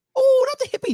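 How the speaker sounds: high, loud, mock protesting tone. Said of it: "Jerry's like".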